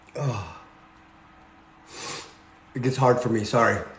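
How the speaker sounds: low, soft, choked-up voice near tears.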